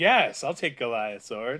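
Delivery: mock thrilled, very loud, excited outburst. Retelling David getting Goliath's sword: excited David impression. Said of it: "he's excited about that. He's like".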